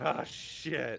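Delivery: shouting in character voice. Role-playing a game character calling out enemies from a cave, yelling in character. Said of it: "He yells out".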